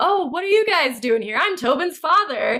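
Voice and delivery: high, sunny, overly cheery and over-friendly tone. Retelling a scene from a story, imitating an overly cheery father. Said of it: "sunny disposition".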